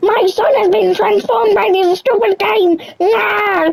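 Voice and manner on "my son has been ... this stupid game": high-pitched screaming outburst. Teasing the other speaker, imitate those parents who just scream. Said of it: "those parents who just like scream".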